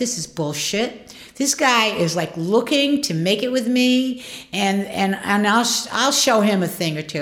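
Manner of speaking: ordinary delivery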